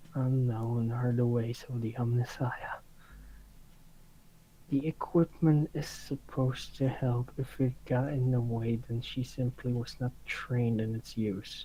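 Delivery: low, muttered aside under the breath. Voicing a character who grumbles about the equipment: muttered under her breath. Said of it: "Jenny will just mutter under her breath".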